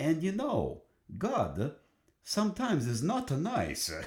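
charming, sing-song put-on Italian accent. Quoting someone on addressing god, the speaker uses a charming italian accent. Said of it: "in this very charming Italian accent".

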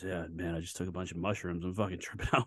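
very quiet, hushed half-whispered aside. Retelling what a friend half-whispered on the golf course: imitating someone half-whispering. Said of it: "starts whispering to me".

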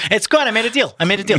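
high, mock boastful leader voice.

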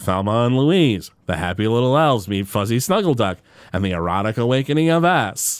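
deadpan announcer voice, read dead straight. Describing a movie parody, the speaker quotes the announcer: deadpan Troy McClure announcer voice. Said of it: "this deadpan announcer who's like".

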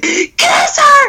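very high, shrill, yelled-out blurt. Retelling how dad yells out in movie theaters, imitating dad yelling. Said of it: "He just yells out".

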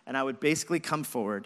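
ordinary talk

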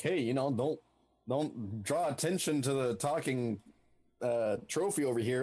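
ordinary delivery

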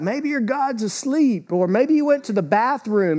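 taunting, mocking tone.

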